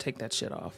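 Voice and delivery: low, hushed, breathy whisper. Retelling his words in the room: imitating a lowered commanding voice. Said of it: "drops his voice and makes a command again".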